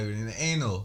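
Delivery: ordinary talk, nothing marked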